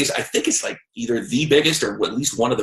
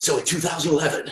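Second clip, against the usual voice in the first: mock radio announcer voice, higher pitch; 5 semitones higher, 3 dB quieter than usual. Starting the next part of a story about a book: put-on radio voice. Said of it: "you like the radio voice?".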